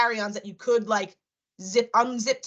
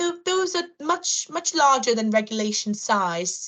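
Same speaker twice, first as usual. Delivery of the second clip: put-on borrowed British accent; 3 semitones higher than usual. Retelling what a woman said to her and her companions: British accent. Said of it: "do you hear that my accent's like kind of great".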